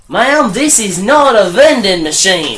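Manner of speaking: terrible, bad put-on Australian accent. Retelling a story, quoting the tech's reply to a customer: bad Australian accent. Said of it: "That was a terrible Australian accent".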